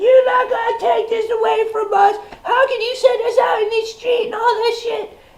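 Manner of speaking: put-on shrill, very high little-girl scream. Retelling a scene, speaker quotes Lori yelling at Herschel: mock screaming as Lori. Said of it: "she starts screaming like a little girl".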